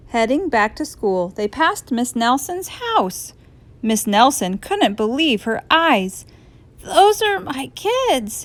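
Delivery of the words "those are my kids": slow, high-pitched, scratchy voice. Miss Nelson sees her students out of school, in a scratchy voice. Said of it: "she said in a scratchy voice".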